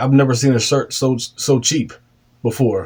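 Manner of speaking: ordinary talk, nothing marked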